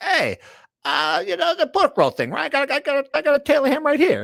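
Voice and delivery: very high mobster voice, pitch swooping up and around. Imagining a coach at a press conference talking like Paulie Walnuts. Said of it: "talking like Paulie Walnuts".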